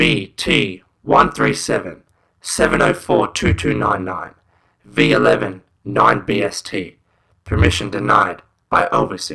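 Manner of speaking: crackly, loud, slow shortwave radio transmission voice. Reading a website message aloud: shortwave radio voice. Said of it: "in a shortwave radio voice".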